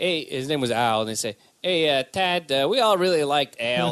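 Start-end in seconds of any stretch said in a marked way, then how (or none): 1.6-3.9 put-on Chicago accent, slower. Retelling what people in Chicago said after his uncle passed away, imitating Chicago talk. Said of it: "That's the way they'd all talk".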